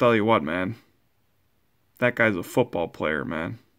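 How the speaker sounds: put-on sports analyst broadcaster voice. Reacting to a pulled Anthony Munoz card: Gruden impression. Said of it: "In my best Gruden impression".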